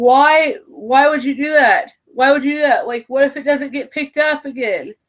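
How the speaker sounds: mild, high-pitched half-yell. Recalling watching the season seven finale: retelling yelling at the tv. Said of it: "I was yelling at the T V".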